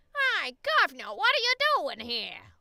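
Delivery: very loud, swooping, put-on Cockney accent. Asking which British accent is meant, trying a line: Cockney accent. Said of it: "is that Cockney? ... The one that's like".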